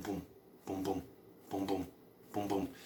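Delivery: soft, low heartbeat thumps. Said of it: "They can hear it going boom".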